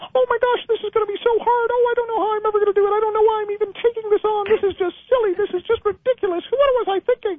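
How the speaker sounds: squeaky voice, way up high. Guiding an exercise, speaker repeats an inner thought in Mickey Mouse voice. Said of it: "put it into Mickey Mouse's voice".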